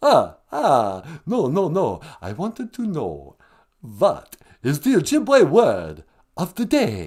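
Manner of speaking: slow, drawn-out vampire voice. A phone-in bit, the Count answering the host: the Count voice. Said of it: "the Count from Sesame Street's on the line".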